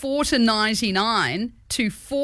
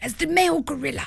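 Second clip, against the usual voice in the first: raised, creaky wildlife documentary narrator voice; 5 semitones higher than usual. Showing how this voice differs from a drunk aristocrat's, in a David Attenborough voice. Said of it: "David Attenborough is like".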